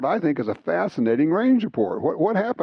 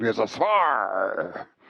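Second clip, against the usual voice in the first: low put-on pirate accent, drawn-out spar; 6 semitones lower, 3 dB quieter than usual. Saying the acronym the way they like to, in a pirate accent. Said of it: "with a pirate accent".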